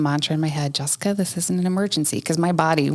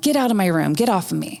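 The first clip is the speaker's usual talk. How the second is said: put-on acted, upset child's mild, half-yelled outburst; 3 semitones higher than usual. Retelling a child carried to her room: imitating a child yelling. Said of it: "she's yelling".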